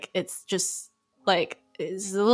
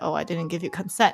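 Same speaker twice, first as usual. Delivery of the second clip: put-on joking voice, lower pitch; 2 semitones lower than usual. Recounting a friend's date, speaker repeats what the friend told the guy: retelling a joking remark. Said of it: "but with like in a very joking way".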